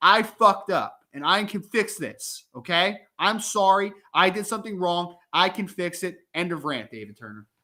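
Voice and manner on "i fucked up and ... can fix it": slow, bold, chest-out, confident delivery. Showing how a leader should own a mistake: confident, chest-out apology. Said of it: "Puff out your chest and say".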